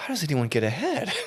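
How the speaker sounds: acted, high, tearful, close-to-crying voice. Recounting a tax office visit, the speaker acts out welling up with tears. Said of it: "I looked at her like welling up".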